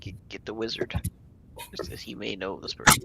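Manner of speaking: whispered speech. In a roleplay scene, whispering an instruction to another character. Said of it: "I'll whisper to Yip Yip".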